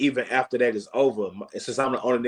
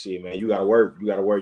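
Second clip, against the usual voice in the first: ordinary talk, nothing marked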